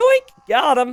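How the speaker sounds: voice breaks and cracks on the word. Streamer finds the weak villager his scout was looking for; voice cracking. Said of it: "My voice cracked like I'm a teenager".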